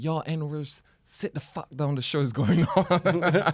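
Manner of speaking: put-on cussing rant. Retelling how a performer cussed at the crowd: imitating someone cussing out a crowd. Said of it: "this guy's cussing up the same staff".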